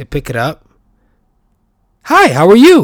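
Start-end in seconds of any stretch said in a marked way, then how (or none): 2.0-2.8 fake phone voice, very high and very loud. Speaker mimics how people answer a ringing phone, imitating a fake phone voice. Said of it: "And then they do this fake ass voice".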